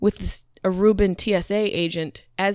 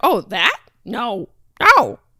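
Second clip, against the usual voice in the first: mock very slow, sing-song, clueless innocent tone; 2 semitones higher, 4 dB louder than usual. Retelling answering an agent's question about a joint: retelling playing dumb. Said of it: "being dumb with a smile".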